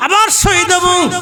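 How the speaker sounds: calling out high and defiant.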